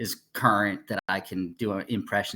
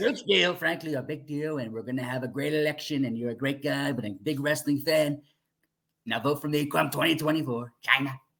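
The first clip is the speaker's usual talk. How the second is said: higher-pitched, boastful, politician-style rally speech voice; 5 semitones higher than usual. Doing an impression after being asked for it: Donald Trump impression. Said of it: "That was good".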